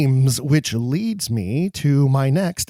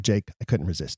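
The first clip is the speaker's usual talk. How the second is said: ordinary talk, nothing marked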